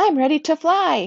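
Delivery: proud, joyful, beaming, high, loud, drawn out. Narrator reads a character ready to test his new wings, beaming. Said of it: "he beams".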